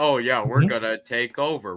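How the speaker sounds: put-on flat villain voice. Imitating the show's villains, the Pikes: imitating dry, basic villains. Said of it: "The way you did that voice".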